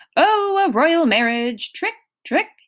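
high-pitched shout. At the table during a card game, a man tallying his points, yelling. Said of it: "Mr. D yelling".

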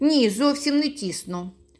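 confident, assured, untroubled tone. A new acquaintance answers Kuzya's question, confident. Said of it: "впевнено відповів".

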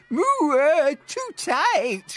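gasped out. A narrator reads a cow being squeezed by a magic carpet, gasping. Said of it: "gasped Blue Cow".

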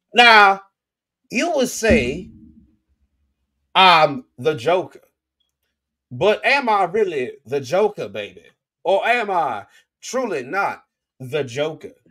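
Southern drawl swinging up and down in pitch. Retelling a man in Joker makeup speaking in court, as a Foghorn Leghorn impression. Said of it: "he does a Foghorn Leghorn impression".

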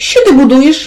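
astonished, high-pitched, surprised exclamation. Two piglet brothers find their brother at work and cry out together, surprised. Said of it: "в один голос вигукнули здивовані".

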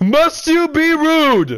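slow, proud, indignant, haughty knight voice.

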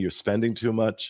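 ordinary talk

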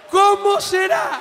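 put-on high-pitched old man voice, shouting.

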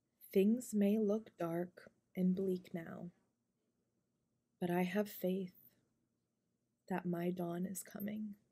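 mix of whispering and soft, quiet speech. Reading a prayer aloud to listeners, in a mix of whispering and soft speech. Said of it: "a mixture of whispering, and soft speaking".

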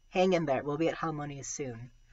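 plain

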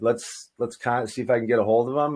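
ordinary talk

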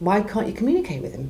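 plain

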